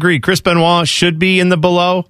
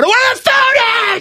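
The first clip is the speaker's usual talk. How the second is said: acted screaming, high, climbing, swooping, "food" stretched out. Retelling a comedy bit after being urged to say it like Sam Kinison. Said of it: "he screams at people".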